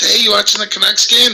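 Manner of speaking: put-on very high, drunken voice. Retelling a call from a buddy: imitating a drunk friend. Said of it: "He's all drunk, and he goes".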